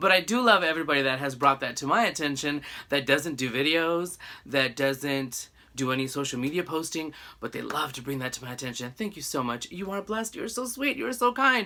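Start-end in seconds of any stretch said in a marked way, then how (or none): 9.0-11.7 high, overly sweet, sugary sarcasm. Thanking viewers who point out the speaker's ums: sarcastic. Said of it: "that was a little bit of sarcasm".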